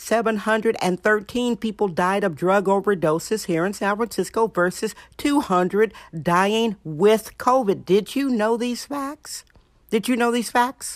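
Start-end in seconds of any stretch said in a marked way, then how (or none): 9.9-11.0 voice cracking and breaking. Repeating the same question a second time, voice cracking. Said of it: "I know my voice cracked".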